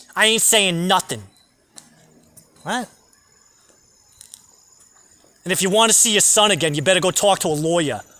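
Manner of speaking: imitated Staten Island accent. Speaker quotes what a woman told him, in a Staten Island accent. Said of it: "that Staten Island accent".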